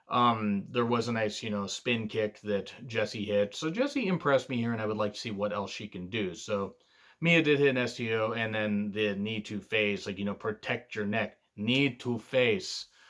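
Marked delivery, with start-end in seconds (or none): 10.3-12.8 slow, poor put-on Japanese accent. Recapping a match move, doing a bad Nakamura impression. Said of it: "just trying to do Nakamura there".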